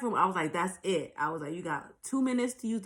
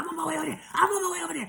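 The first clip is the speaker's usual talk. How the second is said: put-on shrill, very high-pitched screaming; 10 semitones higher than usual. Retelling how a friend on the phone heard the struggle: imitating a friend screaming. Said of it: "just screaming in the phone".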